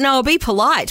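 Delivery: normal talking voice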